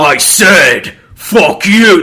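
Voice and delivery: booming, bellowing, drawn-out dragon voice. Storyteller voicing the dragon's line in the story, in a dragon voice. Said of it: "That's my dragon voice now".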